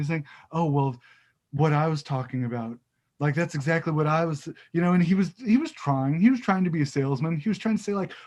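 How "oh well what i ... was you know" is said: ordinary talk, nothing marked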